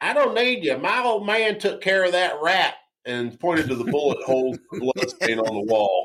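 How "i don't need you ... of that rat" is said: full-on backwoods country voice, pitched up. Retelling what a woman at a trailer park told a friend, in a country backwoods voice. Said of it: "says in the most country backwoods voice".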